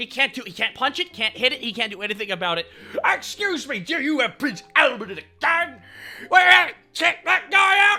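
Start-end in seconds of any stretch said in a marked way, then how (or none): 3.0-8.0 put-on evil clown voice, yelling. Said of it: "Pennywise just keeps yelling over him".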